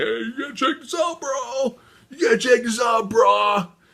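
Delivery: excited, high-pitched, eager voice.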